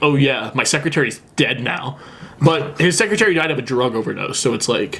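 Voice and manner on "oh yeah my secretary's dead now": normal talking voice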